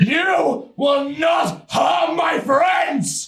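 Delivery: very loud, shrill, high-pitched screaming. Playing a character in a game, the speaker threatens an enemy, screaming in their face. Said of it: "screaming in your face".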